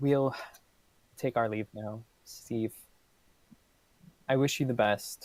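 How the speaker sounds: gentle, resigned, subdued voice. Voicing a character taking leave of a grieving steve: speaking quietly. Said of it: "quietly says".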